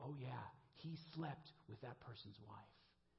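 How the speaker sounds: quiet, hushed, confiding under-the-breath voice. Retelling what people said after pulling the speaker aside, in hushed tones. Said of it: "in hushed tones say".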